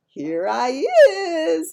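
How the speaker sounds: put-on high, slow, small little-boy voice. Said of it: "So I says".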